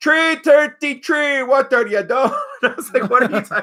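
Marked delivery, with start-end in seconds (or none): 0.0-2.3 put-on Jamaican accent, much higher pitch. Recalling a Jamaican coworker at a warehouse, doing a Jamaican accent impression. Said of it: "his threes were tree".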